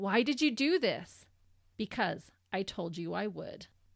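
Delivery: ordinary delivery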